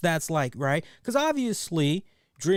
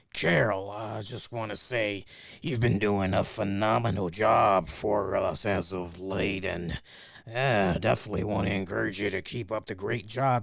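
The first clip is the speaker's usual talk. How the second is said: gritty, low, rough voice; 10 semitones lower than usual. Telling a story about a boss approaching an employee from behind to praise her work, in a gritty boss voice. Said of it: "a gritty little voice on him".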